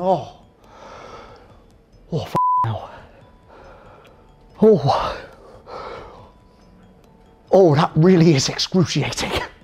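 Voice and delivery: quiet, slow, pained mumbling groan under the breath. Retelling a man's reply when urged to talk them through it, retelling quiet speech. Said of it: "He's really quiet".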